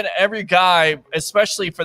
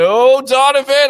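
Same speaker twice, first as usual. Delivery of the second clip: raised, high, loud call; 8 semitones higher, 7 dB louder than usual. Imitating the other speaker reacting while watching the game: impression of the other speaker. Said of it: "was that a good impression for you?".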